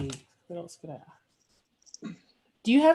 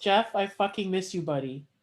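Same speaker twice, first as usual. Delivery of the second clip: usual speaking voice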